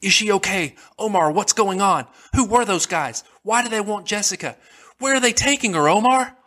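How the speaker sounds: high, rushed, frantic barrage of shouting. Climbing into the passenger seat, the narrator shouts at Omar: frantic shout. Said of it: "I frantically shouted at him".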